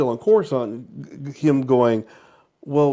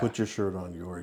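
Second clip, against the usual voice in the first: mock-deadpan flat delivery, lower and quieter; 7 semitones lower, 12 dB quieter than usual. Retelling how a Padawan tells her shirtless master to cover up, retelling a deadpan line. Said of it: "And she's just so deadpan".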